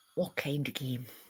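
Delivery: very hushed, quiet, perverted-sounding, suggestive tone. Answering an offer to play a game: suggestive tone. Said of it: "don't say it like that, [name], 'cause you make it sound fucking d-, perverted".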